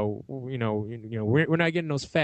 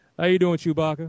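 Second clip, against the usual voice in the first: smooth put-on actor voice, higher pitch; 5 semitones higher, 4 dB louder than usual. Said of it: "says it all smooth".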